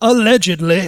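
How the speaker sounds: high, yelled single word from far off. Voicing a character yelling back from far away: yelling back in character. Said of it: "you hear Silas yell back".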